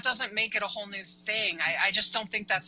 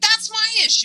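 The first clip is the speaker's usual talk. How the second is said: genuine, all-out, very high, loud yelling; 13 semitones higher, 7 dB louder than usual. Retelling yelling at a brother in the car on the way home: retelling own yell. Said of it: "me yelling at him in the car on the way home, an actual yell".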